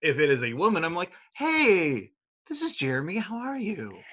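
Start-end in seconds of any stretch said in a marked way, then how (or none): 1.3-4.0 gentle, soft, sing-song, drawn-out voice. Speaker acts out greeting a female customer on a delivery, soft voice. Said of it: "so it's either masculine or soft".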